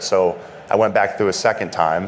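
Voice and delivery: ordinary talk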